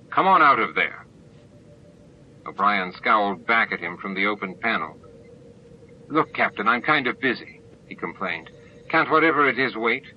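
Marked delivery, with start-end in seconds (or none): 0.2-1.1 very stern, louder. The captain calls the chief out of an open panel, sternest voice. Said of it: "he said in his sternest voice".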